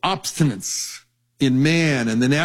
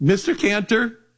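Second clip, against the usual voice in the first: put-on high-pitched nine-year-old girl voice, much higher; 6 semitones higher than usual. Retelling a phone call from a young girl, in a high-pitched nine-year-old voice. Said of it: "in this high-pitched 9-year-old voice".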